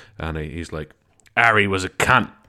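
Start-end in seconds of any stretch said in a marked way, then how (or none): 1.4-2.3 put-on loud delivery in a London accent. Imagining Rod Smallwood's future tell-all book, a speaker voices him: Rod Smallwood London accent. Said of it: "Rod Smallwood is from London in this impression".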